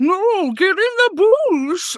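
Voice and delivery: very high, very slow, drawn-out goofy creature voice. Speaker showing a voice used while playing Fortnite with a sister, silly messing-around voice. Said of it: "one of the mess around voices".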